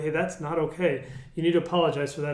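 ordinary talk

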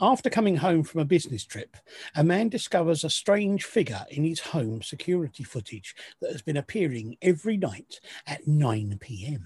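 dramatic documentary-style TV narrator voiceover. Reading out a film's synopsis, as a Channel 4 narrator voiceover. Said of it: "you sounded like the sort of voiceover and narrators".

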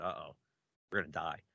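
plain

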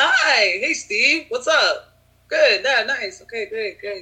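fake high girlish voice.

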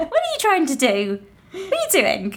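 put-on playful, high-pitched baby talk with laughter.

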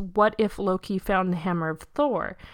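ordinary delivery

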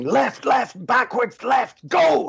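mock very high-pitched, very slow, drawn-out barked shouting. A writer recalls a director on set yelling directions at actors, retelling the shouting. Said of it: "the director was just shouting at them".

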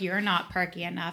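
ordinary talk, nothing marked

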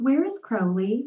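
strained politeness. Reading a story aloud, Zira questions Dan with strained politeness. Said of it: "as politely as she could".

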